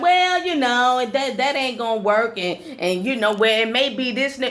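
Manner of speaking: hedging, naysaying, nagging, complaining tone. Retelling how complainers answer a suggestion: imitating someone complaining. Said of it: "They be like".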